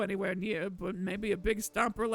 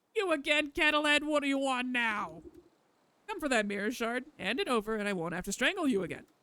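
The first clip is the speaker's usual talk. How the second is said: cackling, taunting creature voice; 3 semitones higher than usual. A voice from the tree's knotholes demands the mirror shard from kettlehead, cackling voice. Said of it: "A familiar cackling voice".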